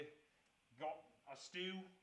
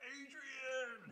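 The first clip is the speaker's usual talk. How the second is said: pitched-up boxing-style call, name called high; 9 semitones higher than usual. Answering a chat request for a voice: Rocky Balboa voice. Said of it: "Rocky Balboa".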